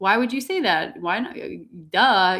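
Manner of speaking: loud, snarky, sarcastic tone. Acting out a lower-vibration being's answer: imitating a sarcastic reply. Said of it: "be a bit more sarcastic".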